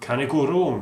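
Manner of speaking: failed, bad attempt at a Scottish accent. Talking about a game compilation he bought cheaply, in a bad scottish accent. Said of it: "that was supposed to be a Scottish accent".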